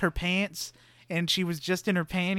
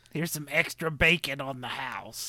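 put-on 1950s waitress voice, lower and quieter; 4 semitones lower, 7 dB quieter than usual. Describing a waitress and acting out how she talks to customers: imitating an old 1950s waitress. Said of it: "talks like an old waitress at a 1950s bar".

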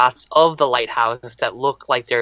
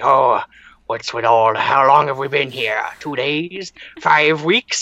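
put-on old, grizzled seafaring sea-captain voice. Act out the bearded sea captain type in a film, in Willem Dafoe's old seafaring voice. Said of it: "he's got like the old seafaring voice".

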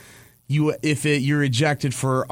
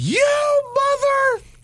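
put-on screaming, higher pitch; 3 dB louder than usual. Acting out a coach in the middle of the diamond: imitating a coach screaming.

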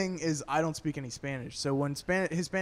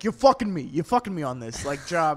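loud, maniacal ranting; 6 dB louder than usual. Retelling an old school dude from the office on the phone: imitating Frank talking like a maniac. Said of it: "talking like maniacs".

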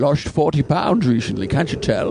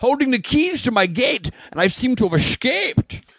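put-on Scottish actor voice, pitched higher; 10 semitones higher than usual. Revealing an escape while holding the gate keys: Sean Connery voice. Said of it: "I'm Sean Connery".

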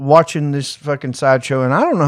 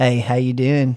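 mocking, sleazy, flirtatious tone. Retelling how a store clerk greeted a customer: imitating a sleazy flirty clerk. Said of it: "he's like all Leisure Suit Larry type sleazy".

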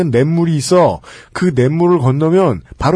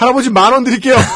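high, flustered, urgent blurting, acted out; 7 semitones higher than usual. Reading out a listener's story, the writer speaking to the grandfather; retelling a flustered offer. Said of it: "당황한 저는".

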